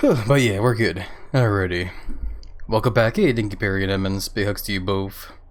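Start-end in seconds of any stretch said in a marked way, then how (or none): 0.0-3.2 slightly winded, catching breath. Host back after rushing over, welcoming listeners back: a little out of breath. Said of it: "A little out of breath".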